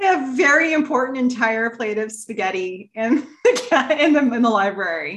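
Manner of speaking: talking through laughter, words breaking up. Describing a spaghetti episode to another speaker: laughing while talking. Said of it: "I can't even say it without laughing".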